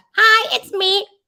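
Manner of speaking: very high-pitched borrowed voice. Showing the right way to do another person's voice: N K voice. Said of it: "Do the N K voice".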